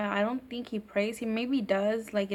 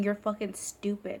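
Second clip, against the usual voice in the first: put-on, mocking laugh. Retelling what a sister said to a priest: imitating someone laughing mockingly. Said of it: "laughing and saying".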